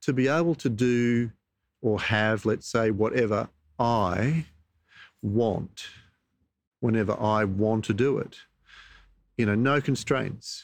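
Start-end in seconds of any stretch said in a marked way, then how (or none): 0.0-8.4 spelled out at a crawl, slow and deliberate. Repeating a definition in order to examine it, slowly. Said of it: "I'll say it again slowly".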